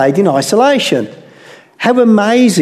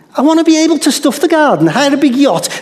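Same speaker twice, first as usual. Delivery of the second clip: put-on Scouse accent, pitched up; 6 semitones higher than usual. Voicing a woman's wishes in her own accent, put-on Liverpudlian accent. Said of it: "the thought in her Liverpudlian accent".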